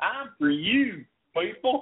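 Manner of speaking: put-on Southern drawl, pitched very high. Mocking a woman who started talking in a southern drawl, mock southern drawl. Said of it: "automatically started talking in a Southern drawl".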